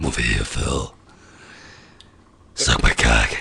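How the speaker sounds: deep, dropped, very low demon voice. Riffing on a huge horned movie demon, calling someone over in a demon voice. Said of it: "That was that was me demon voice".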